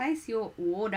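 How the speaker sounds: clumsy, awful put-on Australian accent. Reading out a chat line and sounding like Van Damme. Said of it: "I sounded like Van Damme".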